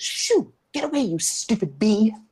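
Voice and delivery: tiny, high little voice from a distance. Guide describing a flower bed scene to listeners, tiny little voice. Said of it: "you hear a tiny little voice saying".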